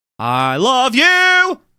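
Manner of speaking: proud, loud delivery, pitched very high. Asked to say it loud, declaring love to listeners: saying it loud. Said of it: "Say it loud".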